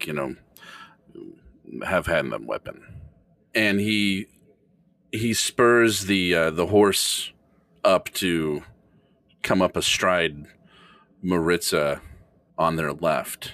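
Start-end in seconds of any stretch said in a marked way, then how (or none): 0.1-2.8 muttered under breath, much quieter, lower. [name] speaks to Jack so others won't hear: under his breath. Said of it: "under his breath".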